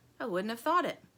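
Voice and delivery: ordinary talk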